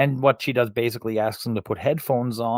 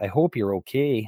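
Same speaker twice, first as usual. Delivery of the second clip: put-on, very strong Canadian accent. Quoting a throwaway line you really liked, as Dan Aykroyd in a very Canadian accent. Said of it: "in a very Canadian accent".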